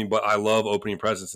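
normal talking voice

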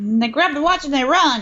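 clumsy, terrible put-on mid-Atlantic accent. Quoting a detective's statement about the robbery: bad mid-atlantic accent. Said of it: "the worst mid-Atlantic accent I have ever heard".

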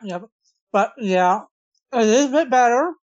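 chewing while talking, mouth full of food. Answering a host's question on a show, talking with mouth full. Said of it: "I have crackers in my mouth".

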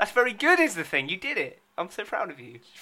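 mock-proud, laid-on sarcasm, swooping tone. Reacting to a fan-cast idea, sarcastic praise. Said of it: "That was sarcasm".

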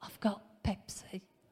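quiet, hushed whispering. Retelling how mum quietly told them about the Pepsi: imitating a whisper. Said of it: "So she whispers to me".

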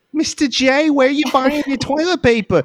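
put-on very high, terrible New York accent. Retelling a daughter's fight with Mr. J over toilet paper, in a terrible New York accent. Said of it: "She has a terrible New York accent".

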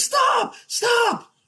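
play-acted very high frightened cry. Retelling yelling at a driver veering toward the guardrail, re-enacting a yell. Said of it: "I'm yelling".

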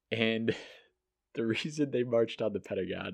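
straight face slipping, suppressed giggle. Recounting why the Yippies marched on the Pentagon, holding back a laugh. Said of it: "I can't even say this with a straight face".

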